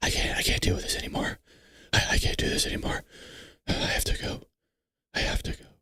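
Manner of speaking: eerie, creepy, stuttering whisper with stammered repeats. Describing a man in a video, the speaker shows how he talks: imitating his whisper. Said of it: "this is how he whispers. He goes".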